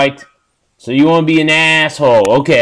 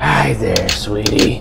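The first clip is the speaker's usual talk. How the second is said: mock creepy whisper, lower and quieter; 6 semitones lower, 5 dB quieter than usual. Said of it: "Just whisper out of nowhere".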